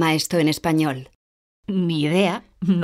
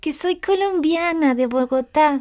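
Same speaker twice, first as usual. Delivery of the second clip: speaking up, louder, very high-pitched voice; 10 semitones higher than usual. Told to speak louder, she repeats where she is from, speaking up louder. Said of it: "Más alto, por favor".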